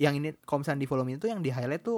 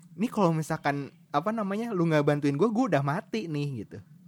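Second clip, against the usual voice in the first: normal talking voice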